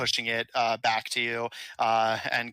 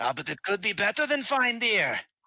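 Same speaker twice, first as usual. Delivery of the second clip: put-on male elf voice, higher; 9 semitones higher than usual. Voicing a male elf offering bloodshot to the party: voicing a male elf dealer.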